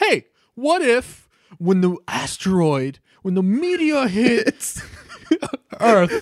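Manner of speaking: put-on New York accent. Retelling how a guy proposed a movie idea, in a new york accent. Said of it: "in a very New Yorker accent".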